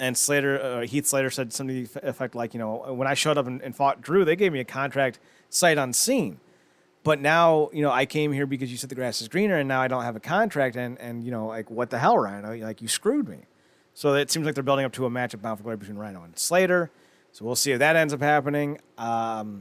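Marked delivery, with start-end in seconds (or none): none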